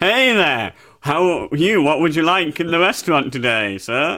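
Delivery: wisecracking, joking character voice. In an improv bit, greeting a customer as a wisecracking diner owner. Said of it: "wisecracking owner of like a cafe or a sort of diner".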